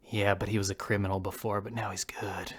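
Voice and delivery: low, confidential half-whisper, close and intimate. Acting out someone leaning in close to the listener's ear, retelling a half-whisper. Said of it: "he whispers into your ear".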